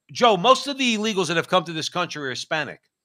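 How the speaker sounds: usual speaking voice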